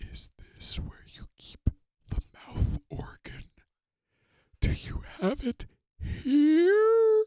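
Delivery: grave, solemn, hushed whisper, drawn out. The creep edges closer to Snufkin, laying a paw on his knapsack: solemn whisper. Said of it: "solemnly whispered".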